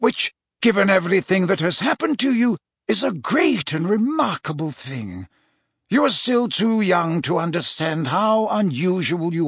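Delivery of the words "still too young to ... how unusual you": ordinary delivery, nothing marked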